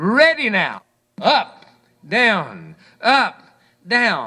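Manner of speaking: stern, slow, strict drill-style delivery. Quoting a man ordering himself through morning exercise, mock-stern self-command. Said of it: "I sternly say to myself".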